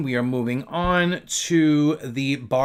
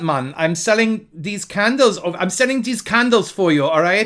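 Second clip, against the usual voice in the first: fake Jamaican accent, pitched up, drifting into Indian; 5 semitones higher, 3 dB louder than usual. Speaker trying out an accent while pitching scented candles, put-on Jamaican accent. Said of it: "the Jamaican accent".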